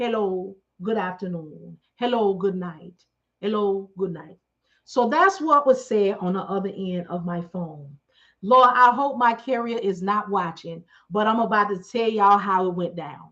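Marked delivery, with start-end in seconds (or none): 0.0-4.4 put-on Jamaican accent. Retelling a phone call, the speaker mimics the caller in a put-on Jamaican accent. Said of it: "It is the Jamaicans".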